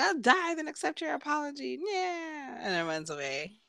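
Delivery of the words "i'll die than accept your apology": put-on high, fast, bratty little boy voice. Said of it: "so he's like".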